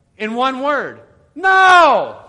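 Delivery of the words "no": very loud, high, stretched-out, drawn-out shout. Giving the answer in one word: shouted no. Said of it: "I have to like shout it out".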